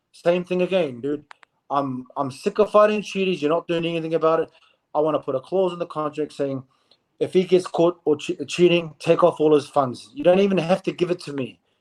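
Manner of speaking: normal talking voice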